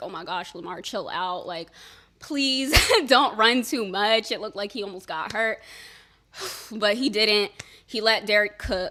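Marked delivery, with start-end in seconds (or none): 0.0-4.3 acted-out fright, mock-scared pleading tone. Speaker recalls watching a player run during a playoff game, retelling being scared. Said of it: "I did get scared".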